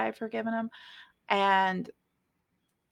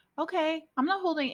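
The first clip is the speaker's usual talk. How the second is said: high, fake, breezy voice. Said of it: "convinced myself that I've forgiven this person".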